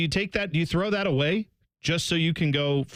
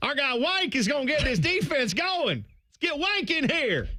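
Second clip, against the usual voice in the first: very high put-on Southern accent, "wink" as "wank"; 11 semitones higher than usual. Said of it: "anybody with a Southern accent".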